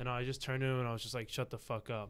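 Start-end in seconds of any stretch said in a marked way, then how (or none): 1.3-2.1 mock-annoyed voice, slower. Retelling a moment when parents were heckling, retelling an annoyed retort. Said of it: "I was starting to get annoyed".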